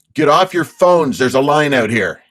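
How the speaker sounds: very loud, booming voice filling the whole room. Speaker retells calling out so everyone could hear, retelling a very loud call. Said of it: "in a very loud voice where everybody could hear me".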